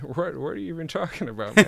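put-on full-mouthed, food-stuffed speech. Doing a requested impression from Confessions of a Dangerous Mind: Sam Rockwell impression. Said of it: "The most obscure impression I do is probably Sam Rockwell".

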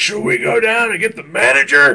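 put-on shrill, very high, loud screaming. Retelling how a stranger confronted him: imitating someone screaming. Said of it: "he keeps screaming".

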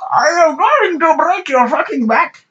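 very high scream. Repeating a security guard's threat after a listener mentions Bane: Bane voice.

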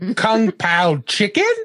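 put-on slow Australian accent.

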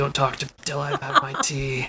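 soft, gravelly, rasping voice. Describing how Rocky sounds before she has her tea, in a gravelly Rocky voice. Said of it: "It's kind of gravelly".

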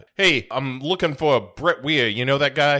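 sharp character voice with full bravado. Retelling a prank phone call to a club: Frank Rizzo voice. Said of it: "goes full Frank Rizzo".

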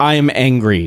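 put-on dead flat, emotionless delivery. Mocking a woman who can't sell an angry line, imitating flat emotionless delivery. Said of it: "not conveying it in her voice or her tone".

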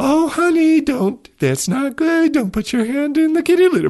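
saccharine, sickly sweet put-on voice, very high. Mocking people who avoid shaming a child, in a put-on sickly sweet voice. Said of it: "they're always in a sickly sweet sort of voice like".

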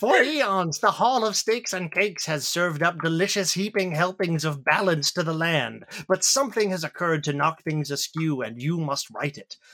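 put-on wizened old man voice. Addressing the adventurers about their quest, the speaker plays a wizened old man voice. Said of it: "wizened old man clutching a staff".

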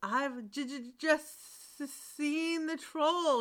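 gasping voice. The second son runs back from the forest to his father, gasping. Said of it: "he gasped".

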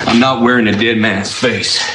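put-on gravelly impression voice.

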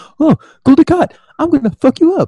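very high trash-talk taunting tone. Imitating the commander talking to a Cardassian: Sisko shit-talking voice. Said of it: "his shit-talking voice".

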